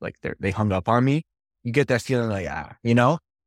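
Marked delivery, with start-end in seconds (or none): none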